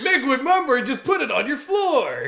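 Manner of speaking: infomercial pitchman voice. Parodying an infomercial, the speaker plays the pitchman: Mickwood Mumber infomercial voice. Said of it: "You're watching the infomercial".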